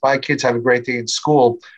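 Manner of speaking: plain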